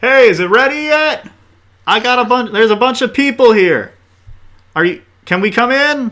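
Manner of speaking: loud, very high-pitched hollering. A storyteller voices a character who hollers in, hollering. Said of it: "he hollers in".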